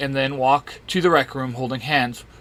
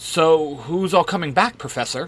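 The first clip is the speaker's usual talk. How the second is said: usual speaking voice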